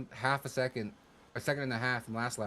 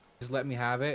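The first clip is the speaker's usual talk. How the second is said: imitated pleading tone. Retelling a plea to a teammate during a race: retelling own pleading. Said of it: "So I was pleading with him".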